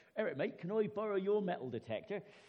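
put-on Suffolk farmer's accent. Retelling a man asking his mate for his metal detector, in a Suffolk accent. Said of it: "should I do the Suffolk accent?".

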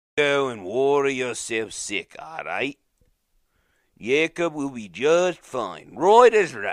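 put-on slipping into Australian accent. Speaker rehearses how a character says a line, slipping into Australian accent. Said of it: "Slipping back to the Australian".

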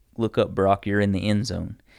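normal talking voice

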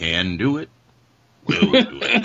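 slow, high-pitched mumbled grunting. Describing a game character's motivational GI talk, imitating mumbling under his breath. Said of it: "he kind of mumbles motivational, like, GI stuff under his breath".

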